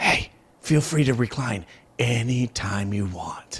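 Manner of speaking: slow, eerie, creepy half-whisper, close up. Showing how to lean to a reclining seat-mate's ear: creepy half-whisper. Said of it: "lean up right next to my ear and whisper".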